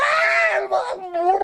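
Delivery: frantic panicked screaming. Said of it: "He's like".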